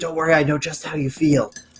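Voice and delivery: soft, hushed half-whisper. Half-whispering to another player's character in the game: half-whispering in character. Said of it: "I'm gonna whisper to you".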